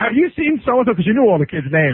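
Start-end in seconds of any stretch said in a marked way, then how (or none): 0.0-0.9 mock frantic panicked voice, higher pitched. Retelling a teacher running through the hallway after a lost student: imitating a frantic teacher. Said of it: "the teacher was frantically running through the hallway".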